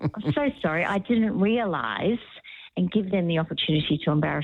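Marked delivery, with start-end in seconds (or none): 0.0-2.2 mock very slow, drawn-out, passive-aggressive sorry. Acting out what to say to a dinner host asking for money: put-on passive-aggressive tone. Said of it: "I'm a bit passive aggressive".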